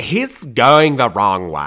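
put-on loud sorority-girl way of talking. Retelling what a sorority girl said in the car, imitating a sorority girl's voice. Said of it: "and this is the way she said it".

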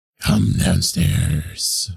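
rough, creaky, two-toned doubled false-chord voice. Trying the false-chords trick on come downstairs, two voices at once. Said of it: "I try to do like two voices at once".

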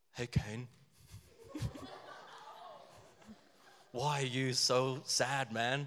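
soft, cool, relaxed surfer dude voice. Retelling god speaking to cain, the accent slips into a cool surfer dude voice. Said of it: "It's like a cool surfer dude".

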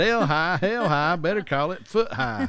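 imitated Southern accent. Quoting a rival's remark on a town name: imitating a Southern accent. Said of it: "he's from the South all of a sudden".

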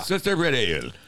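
put-on Irish accent. Speaker repeats a line about red ale in an Irish accent. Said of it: "It's my Irish accent".

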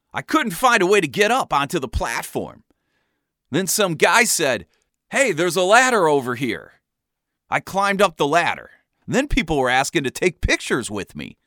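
normal talking voice

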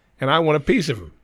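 ordinary delivery

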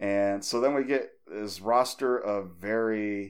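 ordinary talk

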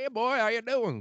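very high put-on country accent voice. Listing american accents, demonstrating a country accent. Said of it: "Country accent".

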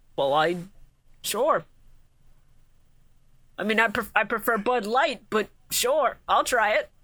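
mock elderly man voice. Acting out Grandpa Moto accepting Pegasus's drink offer: acting as Grandpa Moto. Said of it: "Grandpa Moto goes".

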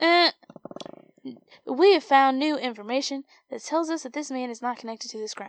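put-on loud, stiff delivery in a Southern accent.

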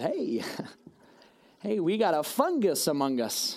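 put-on jolly older doctor voice, sing-song, drawn-out. Retelling what an older doctor said on entering: imitating a jolly doctor. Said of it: "he's all jolly".

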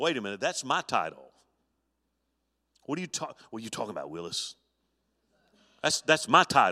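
stammering, jealous, indignant, possessive outburst. Acting out Herod hearing of one born king: acting out jealous Herod. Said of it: "this guy here was eaten up with it".

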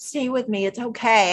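acted gentle, soothing voice. Recapping a scene, the speaker quotes Jay in Jay's put-on calm voice. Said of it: "Jay's calm voice where Jay's just like".

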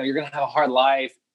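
plain

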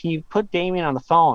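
ordinary talk

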